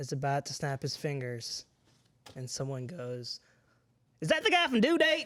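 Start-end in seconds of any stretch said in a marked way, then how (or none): 4.2-5.3 put-on Southern accent, very high and very loud. Imitating someone in a theater asking a question: put-on Southern accent. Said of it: "that was also a very good Southern accent".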